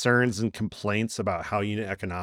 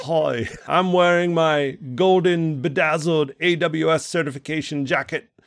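put-on worst-ever Australian accent, pitched up, loud; 7 semitones higher, 5 dB louder than usual. Pretending to be a caller on the show: Mike Fuller impersonation in bad Australian accent. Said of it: "worst Australian accent and Mike Fuller impersonation".

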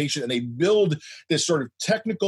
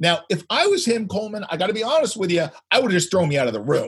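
ordinary delivery

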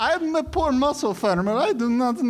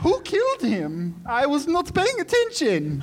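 put-on German accent, small, weak man's voice; 2 semitones higher than usual. A player in a tabletop role-playing game voices a small, weak man in a put-on German accent. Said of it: "a small, weak man rushes forward through the forest. ... You shouldn't have messed with old Vaj Peter. This is my German accent".

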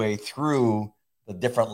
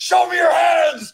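mock loud shout, higher and louder; 9 dB louder than usual. Retelling how officers shouted at the figure on the roof: retelling a loud shout. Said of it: "That was loud".

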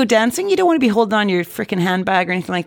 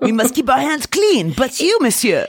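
put-on French accent, English with a French lilt; 3 semitones higher than usual. Acting out a French government stance on paying a ransom, French accent. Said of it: "your French accent is not as good as mine".

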